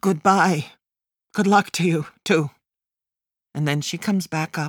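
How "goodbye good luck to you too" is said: stammering, stuttering. My mother says goodbye as she slams the door; stammering.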